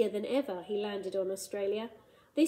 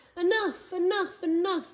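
very high, full-throated roaring bellow; 9 semitones higher, 6 dB louder than usual. Narrating the monster's reply to the Iron Man, roaring. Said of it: "he roared".

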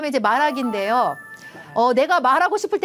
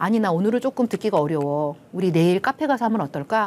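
usual speaking voice

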